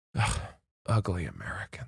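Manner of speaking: barely voiced, whispered grumble under the breath. Retelling how Dad reacts to other Americans abroad, imitating him muttering under breath. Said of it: "he'll just go under his breath".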